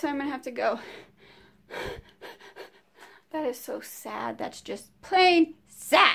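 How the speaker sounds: winded, out of breath. Signing off a video after walking up the stairs, out of breath. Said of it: "And I'm out of breath".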